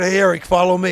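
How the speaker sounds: ordinary talk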